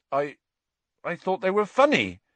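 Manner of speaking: uncertain, hesitant, slightly high voice. Narrator reads one character speaking to another, uncertain. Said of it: "Hagrid said uncertainly".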